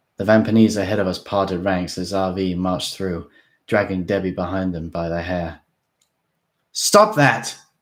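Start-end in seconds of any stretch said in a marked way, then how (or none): 6.7-7.5 high, loud, angry shouting outcry. Reading a story aloud, a character yells at a captor: angry shout. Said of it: "I shouted angrily".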